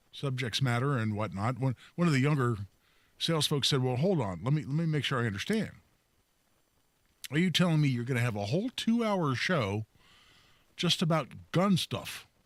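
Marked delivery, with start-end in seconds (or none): 3.9-12.3 play-acted skeptical, cynical tone with sarcastic edge. Retelling a young salesman's doubtful question about the show: imitating a cynical, sarcastic tone.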